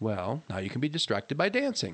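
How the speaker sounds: plain reading voice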